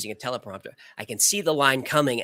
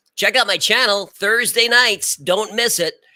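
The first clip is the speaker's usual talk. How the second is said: loud, pitched-up, hyped presenter delivery; 9 semitones higher, 7 dB louder than usual. Speaker shows how they talk when the Patreons are on; performance voice. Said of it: "I'm doing my performance voice".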